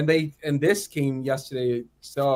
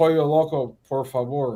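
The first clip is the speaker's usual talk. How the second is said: Spanish words anglicized with an English accent. Asked to say a Spanish phrase, the speaker says it in an English accent. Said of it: "in English accent".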